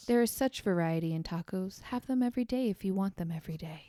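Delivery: soft, gentle ad-read voice. Doing a mock taco commercial with a co-host, in a soft commercial voice. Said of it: "My soft commercial voice".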